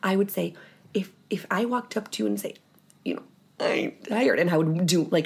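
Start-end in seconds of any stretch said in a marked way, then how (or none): 3.6-4.4 exaggerated, over-the-top whiny voice. Demonstrating how they would complain to someone, in an exaggerated whiny voice. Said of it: "an exaggerated whiny voice".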